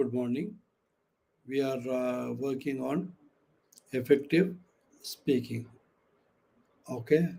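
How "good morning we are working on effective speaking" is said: toned-down, subdued, very low, quiet tone. Demonstrating tone while teaching effective speaking, very low tone. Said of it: "I'm talking to you in a very low tone".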